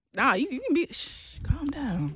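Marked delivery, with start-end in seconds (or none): 1.5-2.2 sultry, seductive voice. Demonstrating how to tell your woman to calm down in a sexual, seductive way. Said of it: "If you want to tell your woman calm down, you got to do it in a sexual way".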